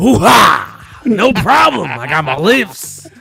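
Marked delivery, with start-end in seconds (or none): 0.0-1.0 loud, rough exclamation, belted out. After refusing to mix two voices, doing an Al Pacino impression. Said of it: "I could do Al Pacino".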